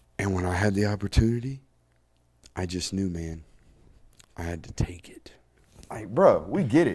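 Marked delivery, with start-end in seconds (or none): 0.2-5.3 put-on whisper, pitched lower. Tired of listening to him, mock how he talks by imitating Tim Tebow whispering. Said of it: "he talks like this".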